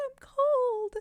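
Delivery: put-on horrible, very high-pitched ghost-girl wail. Recalling the ghost girl's line from a scary story: horrible high-pitched ghost voice. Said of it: "the ghost of the girl had like this horrible like like high pitched voice".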